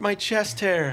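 put-on shrill little-girl scream, very high-pitched. Retelling a movie scene where he gets scared: imitating screaming like a little girl. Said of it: "he starts screaming like a little girl".

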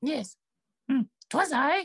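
tiny, very high little goblin creature voice. Narrator voicing a little goblin the listeners have just spotted: little goblin voice. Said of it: "you see a little goblin".

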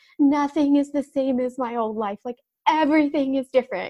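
teary sobbing voice. Retelling what she said to her husband after moving, in a mock crying voice. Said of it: "This is my like mimicking crying voice".

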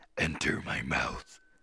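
words breathed out in a whisper. Joking about a book passage, voicing its line as the Cave of Wonders. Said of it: "I was doing the Cave of Wonders".

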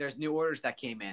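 ordinary talk

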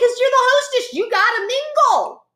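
high, chirpy mock hostess voice.

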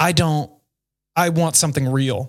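usual speaking voice

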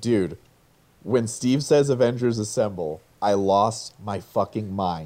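ordinary talk, nothing marked

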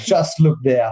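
ordinary talk

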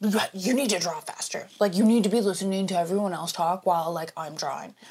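put-on raging, heated, bossy voice. Retelling a game night, imitating a dad who is raging and competitive. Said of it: "a raging fucking, like, competitive".

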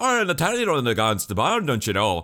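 put-on loud, swooping, garbled Irish-Scottish accent, hard to follow. Complaining about a disliked fighter's voice, doing Gene's Irish-Scottish accent. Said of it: "your Irish, Scottish, whatever fuckish accent".

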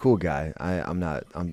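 ordinary delivery

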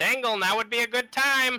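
very high, very loud, shrill, full-throated scream. Calling to an ally while diving into a canal: screaming out loud. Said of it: "I'm just gonna scream out loud".

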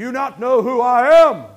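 very loud, very slow, drawn-out booming voice. A preacher mimes taking offense at people who doubt him, in a Charlton Heston voice. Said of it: "I go in my Charlton Heston voice".

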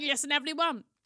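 mock fired-up, passionate rallying delivery. Describing how they talk into the microphone, acting out own passionate talk. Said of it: "something that I get passionate about".

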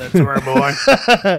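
slow, drawn-out mocking voice. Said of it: "He doesn't talk like that".

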